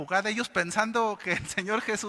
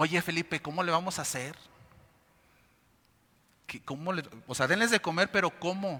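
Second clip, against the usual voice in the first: sarcastic, teasing, feigned puzzlement; 3 semitones lower than usual. Acting out Jesus testing Felipe with a question: imitating Jesus with sarcastic tone. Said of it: "como que da un tono sarcástico".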